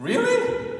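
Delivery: high, loud, incredulous mocking voice.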